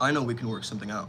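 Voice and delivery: calm, low, steady, certain, disciplined delivery. Giving words to use in a dispute over the park: calm, certain voice. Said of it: "The words to use are going to be a low pitch".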